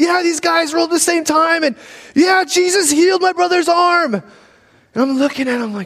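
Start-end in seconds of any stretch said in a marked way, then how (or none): 0.0-4.1 high, excited yelling. Retelling a brother calling a buddy after a healing: imitating brother yelling on phone. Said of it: "he's yelling at him on the phone".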